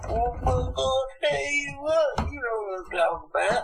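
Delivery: put-on very high, boozy, slurring Appalachian accent. Describing how college-educated rednecks talk once drunk: imitating a drunk redneck accent. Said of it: "and then they're like".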